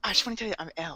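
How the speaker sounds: low-key, really quiet, hushed, barely-there delivery. Retelling an anime scene: imitating L in a quiet voice. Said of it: "really quietly".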